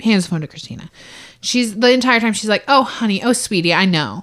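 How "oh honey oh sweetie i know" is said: mock, patronizing, slow, soothing, condescending coo. Retelling a jail phone call, imitating Christina being condescending. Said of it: "being very condescending".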